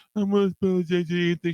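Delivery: very high-pitched, derisive, drawn-out drawl. Mocking the caller's apology by imitating him. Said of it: "you mumble mouth prick".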